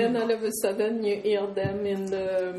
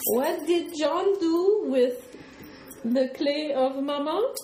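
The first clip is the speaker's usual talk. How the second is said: high, slow, fake French accent. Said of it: "don't do a French accent".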